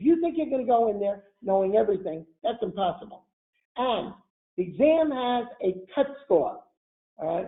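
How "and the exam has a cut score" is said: own New York accent, slow and drawn out. Advising people preparing for an exam, New York accent. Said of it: "Hear my New York accent".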